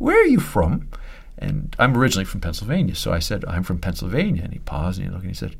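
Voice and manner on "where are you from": put-on very high, small-boy voice with Welsh accent. Retelling a boy on his lap asking where he's from, little welsh boy voice. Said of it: "he said in his little Welsh voice".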